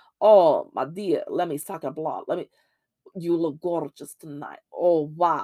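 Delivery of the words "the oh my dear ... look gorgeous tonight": classic, dramatic, theatrical vampire voice. Showing the voice people usually do for a vampire: stereotypical vampire voice. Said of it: "that's usually the voice you do".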